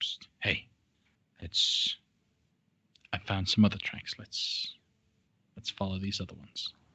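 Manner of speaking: soft, hushed whisper. Voicing a guide who found other tracks, whispering to the group. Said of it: "and whispers to you guys".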